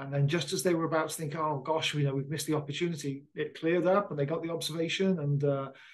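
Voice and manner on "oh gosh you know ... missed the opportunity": usual speaking voice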